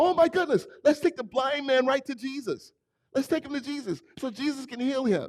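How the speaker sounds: very high, shrill, hollering yell. Retelling a story of a man in a crowd, imitating someone yelling. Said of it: "this guy starts yelling".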